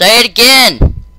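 loud, high calling out.

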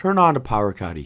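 playful, jokey put-on Irish accent. Turning on a power caddy in a game: put-on irish accent. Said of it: "sounds like an Irishman".

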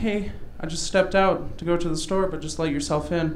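plain

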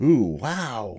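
said with a gasp. A doctor climbs into a fox's mouth and reacts, gasping. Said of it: "he gasped".

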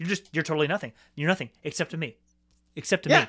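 put-on dismissive voice. Imitating an actor's line delivery in a film scene: imitating Adam Driver's dismissive delivery. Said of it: "in just such a dismissive".

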